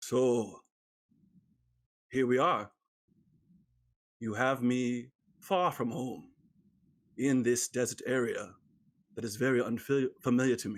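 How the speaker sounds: gentle, quiet character voice. Game master voicing Aegis as the party leaves town, speaking very quietly. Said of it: "and he says very quietly".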